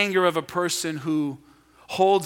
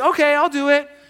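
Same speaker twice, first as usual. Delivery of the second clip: raised, pitched-up, higher tone; 10 semitones higher, 6 dB louder than usual. Showing how a child might answer a request to do a chore: one tone of voice. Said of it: "same words, but tone of voice matters".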